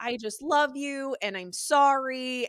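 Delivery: mock very apologetic, slow, with sorry stretched long. Retelling how a character keeps apologizing to him: imitating someone apologetic. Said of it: "she's just being so apologetic".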